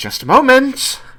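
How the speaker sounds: a bit exasperated, very high, loud, shrill. Narrator voicing Nalia as she calls out from inside, a little frustrated. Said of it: "a little bit frustrated sounding".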